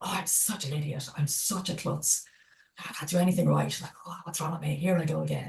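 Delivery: quiet, exasperated, judgmental tone. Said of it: "a very exasperated, kind of judgy".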